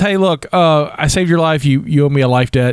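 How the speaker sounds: plain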